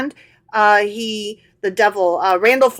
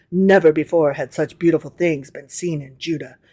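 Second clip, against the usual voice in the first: mock parenthetical voice, lower; 6 semitones lower, 3 dB quieter than usual. Reading a passage aloud as an aside: put-on parentheses voice. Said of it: "we gotta use some parentheses voice here".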